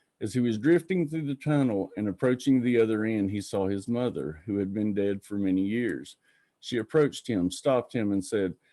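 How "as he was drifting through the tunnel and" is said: usual speaking voice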